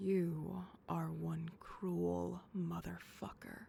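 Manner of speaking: absolutely smitten, lovestruck, adoring tone. Just teased by her partner, [name] answers, absolutely smitten. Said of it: "[She says, absolutely smitten]".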